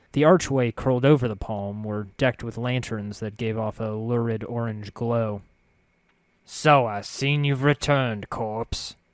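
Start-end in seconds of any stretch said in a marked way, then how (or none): 6.4-8.9 hoary, tired-sounding voice. Reading Farid's greeting in a story; Farid's hoary, tired voice. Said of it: "I turned to see an elderly man leaning heavily upon a crutch. His left leg was twisted, and as if he tried to walk in two directions at once and paid the price. His maggoty-colored skin was bunched he".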